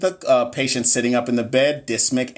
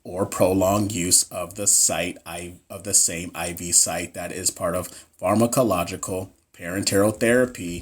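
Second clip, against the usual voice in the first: deliberately flat, low, level put-on monotone; 6 semitones lower, 3 dB quieter than usual. After being praised for not sounding monotone, the speaker reads the quiz answer: fake monotone reading. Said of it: "I'm about to read this answer monotone".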